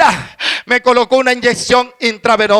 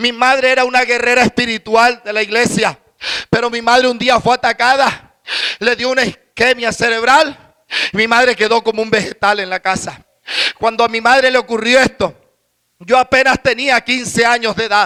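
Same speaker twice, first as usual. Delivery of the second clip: ordinary talk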